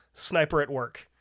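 plain

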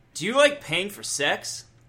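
high, put-on commercial ad announcer voice. Reading an ad aloud, in a put-on announcer voice. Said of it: "I got my announcer voice".

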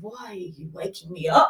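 soft, weary, just-woken ancient dragon voice. Retelling what a really old dragon between trees seemed to say: imitating a tired old dragon. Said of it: "it felt really old and a bit tired".

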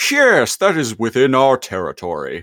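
high, swooping sing-song with wide pitch swings. Retelling what Megatron says in the cartoon: Megatron impression. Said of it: "And Megatron is like".

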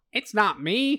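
put-on high, distant old-timey newscaster voice. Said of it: "That's, like, old-timey newscaster voice".

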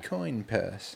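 fake, put-on British accent. Repeating a phrase when asked to say it again: put-on british accent. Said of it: "Say it, say it again".

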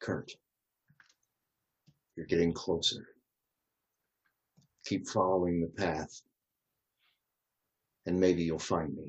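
hushed whisper. Voicing a voice from the past that calls to Kurt: whispering. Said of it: "a voice from the past whispering to you that says".

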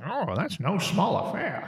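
vintage newscaster delivery. Speaker acts out a man's punchline in a joke, old-timey newsman voice. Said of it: "I don't know why he's an old-timey newsman".

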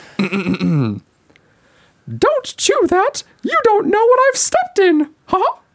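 very high, squeaky, bouncy voice. Voicing a Disney character for a guessing game: Mickey Mouse voice. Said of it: "that was Mickey Mouse".

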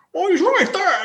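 put-on very high voice, words muffled by full mouth. Retelling a scene from the story, playing Ron talking with his mouth full. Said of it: "like his mouth full".

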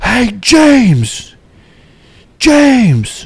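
play-acted very high, swooping, booming, echoing yell. Retelling a voice calling from the third deck up, a booming shout. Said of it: "It's booming, echoing through the atrium".

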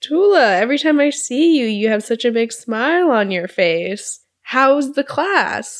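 nosy, prying voice.

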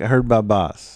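normal talking voice

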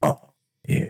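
very low, gravelly, raspy chain-smoker's voice. Retelling a reply heard in front of a cell, imitating a gravelly voice. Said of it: "a gravelly voice was like".

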